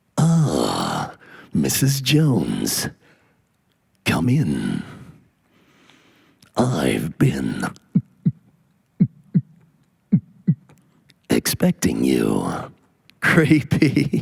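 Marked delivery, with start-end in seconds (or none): 0.1-12.4 very deep, low, slow movie-trailer narrator voice. Imagining the movie trailer voice guy as a gynecologist, doing a movie trailer guy voice. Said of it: "Could you imagine him as a gynecologist?".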